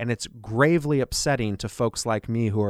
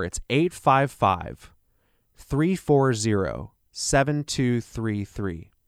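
slightly slower, more deliberate delivery. Repeating the phone number for listeners, a little slower. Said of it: "I'll say that a little slower".

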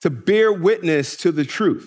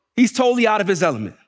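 ordinary talk, nothing marked

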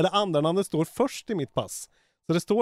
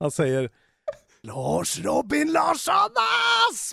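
put-on exclaiming voice, much higher pitched; 12 semitones higher than usual. Asked for a sample of how Isak says a name he finds amusing, imitating Isak exclaiming. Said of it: "hur liksom utbrister han det?".

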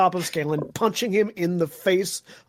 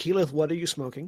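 sarcastically calm, mock-calm, quieter; 2 semitones lower, 5 dB quieter than usual. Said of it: "very nicely and very calmly said".

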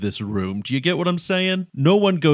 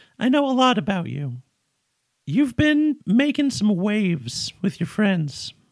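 high-pitched cartoon mouse character voice; 7 semitones higher than usual. Trying out a character voice, admitting it still sounds like Mickey Mouse: Mickey Mouse-like voice. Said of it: "Still kind of Mickey Mouse".

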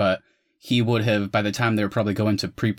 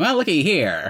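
classic put-on transatlantic accent, pitched up; 8 semitones higher, 3 dB louder than usual. Imitating the accent given to a British actor in a movie, use a classic transatlantic accent. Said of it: "that classic uh, transatlantic accent".

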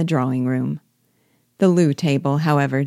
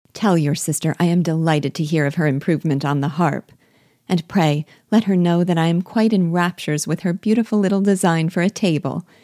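ordinary delivery, nothing marked

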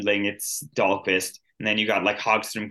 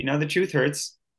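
plain

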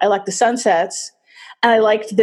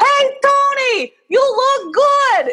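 very high, loud shouted voice. Retelling a man a block away calling out to them on the street, retelling a yell. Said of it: "he starts yelling at us".

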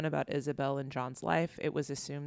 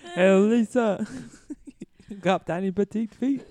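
bad put-on giant voice, French accent, louder; 6 semitones higher, 10 dB louder than usual. Recounting a dream visit from Andre the Giant: Andre the Giant impression. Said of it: "My French person with giantism".

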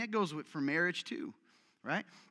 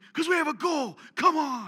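high, raised coach-style pep-talk holler; 8 semitones higher, 8 dB louder than usual. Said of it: "Why are you yelling?".

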